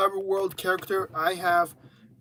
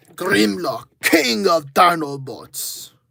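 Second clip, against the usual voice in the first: loud, booming put-on Russian accent; 5 dB louder than usual. Showing Grimlock in dino mode, in Grimlock's Russian accent. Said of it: "in this show, he has a Russian accent".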